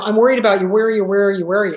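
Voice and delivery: fretting, worried, badgering, pestering parent voice. Imitating a parent with no boundaries who blows up the phone: imitating a worried parent. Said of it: "does this whole, you know".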